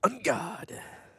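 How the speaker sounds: loud announcer-style call. Showing a co-caster how to call a card name: loud dramatic card call. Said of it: "You gotta say it like this".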